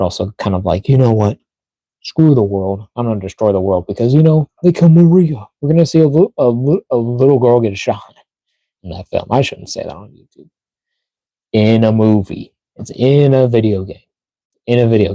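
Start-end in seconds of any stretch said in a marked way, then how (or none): 0.9-5.5 gloomy, fed-up, mopey, brooding. Imitating how Shadow might talk in the movie: mopey Shadow voice. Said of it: "kinda mopey a bit".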